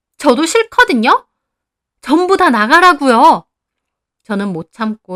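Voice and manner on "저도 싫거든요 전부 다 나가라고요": yelling loudly. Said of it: "소리를 질렀습니다".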